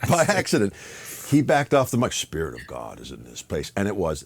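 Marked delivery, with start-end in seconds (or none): 2.1-3.7 low, rough, gritty, gravelly put-on voice. Retelling how the leader spoke on the mic: imitating a gravelly voice. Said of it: "got a gravelly voice".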